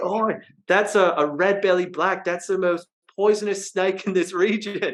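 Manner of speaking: put-on thickest possible Australian accent. Retelling what the girl who owned the place said; thick australian accent. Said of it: "in the most Australian accent like I've ever heard".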